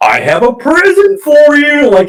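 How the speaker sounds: full-on cartoon madman voice, pitched way up, swooping. Retelling a character's line while he swings the axe: Looney Tunes psychopath voice. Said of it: "Like just full on Looney Tunes psychopath".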